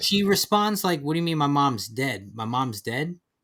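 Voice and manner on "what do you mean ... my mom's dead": plain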